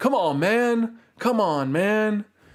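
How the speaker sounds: very slow, drawn-out, dragged-out voice. Trying out an impression during a live stream: Joe Biden impression. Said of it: "can I do a Joe Biden impression?".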